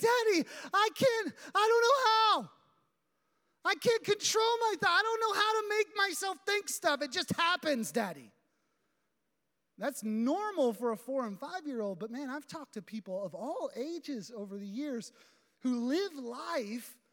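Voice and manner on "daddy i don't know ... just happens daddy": mock frantic, pleading, high child's voice. A father retelling how his young daughter answered him, imitating a panicked child. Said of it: "she would answer in kind of a panicked voice".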